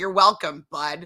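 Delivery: play-acted irritated, put-out, annoyed tone. Retelling how she answered him after his reply: imitating an annoyed reply. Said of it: "she was kind of annoyed".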